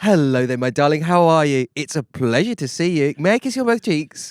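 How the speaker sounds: exaggeratedly courteous, overly polite, gushing tone. Imitating how the other speaker greets his partner: imitating the other speaker's greeting. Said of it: "The next time you meet my missus as well, as usual".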